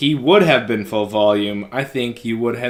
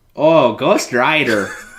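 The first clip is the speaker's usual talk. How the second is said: exaggerated Wisconsin accent, louder; 4 dB louder than usual. Saying a movie title when asked to: put-on Wisconsin accent. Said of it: "Get that Wisconsin accent out when you say Ghost Rider".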